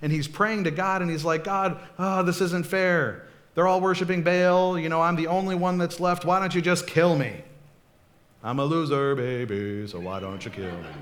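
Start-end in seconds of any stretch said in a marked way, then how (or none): 1.4-10.9 acted-out mopey, depressed, despairing lament. Retelling a prophet hiding and praying to God: acting out a depressed Elijah. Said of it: "He's all depressed".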